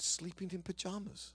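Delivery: put-on British accent. Retelling a conversation, quoting Jackie repeating her answer: Jackie's British accent. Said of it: "in her British accent".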